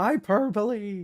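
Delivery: high voice cracking mid-line. Defending writing they don't feel like fixing, voice cracking. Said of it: "I got that voice crack a little too well".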